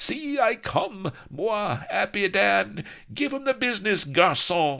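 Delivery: very high, ringing, rousing swashbuckler's battle cry. A pirate leaps to a woman's side in a sword fight, crying out. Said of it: "flourishing his blade and crying".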